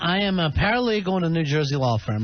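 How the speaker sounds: normal talking voice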